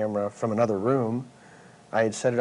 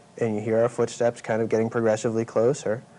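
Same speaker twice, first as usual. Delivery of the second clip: ordinary talk, nothing marked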